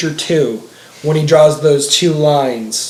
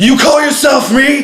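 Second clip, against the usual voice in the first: put-on angry yelling voice, higher; 10 semitones higher, 4 dB louder than usual. Retelling a fight scene where Vegeta yells at his clone: imitating Vegeta yelling. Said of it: "yelling at him".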